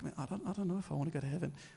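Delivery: soft, hushed half-whisper. Retelling what was said to a confession father: half-whispering. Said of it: "I'm whispering that".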